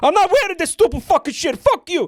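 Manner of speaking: very high, acted-out, pissed-off angry ranting. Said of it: "he got pissed off".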